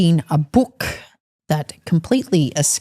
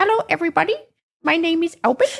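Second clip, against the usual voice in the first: very high-pitched puppet owl voice; 12 semitones higher than usual. Co-host asks the puppet to greet listeners: Albert owl puppet voice. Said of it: "So say hello, Albert".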